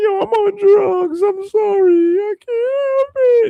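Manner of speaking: very high, slow, drawn-out sobbing wail. Speaker acts out the uncle who stole your money, imitating a crying uncle. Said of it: "he start crying".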